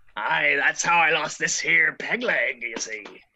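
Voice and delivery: pirate dwarf character voice. Voicing a dwarf pirate knocking on his peg leg: dwarf pirate voice. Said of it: "the dwarf pirate, Ott Steeltoes ... he says".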